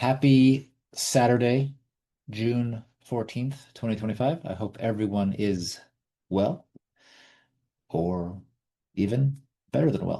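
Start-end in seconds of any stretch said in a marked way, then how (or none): 0.0-3.7 slow, drawn-out delivery. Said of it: "I'm speaking slowly".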